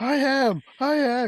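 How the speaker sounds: very high, very slow, shrill, loud, drawn-out scream. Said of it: "He starts screaming it".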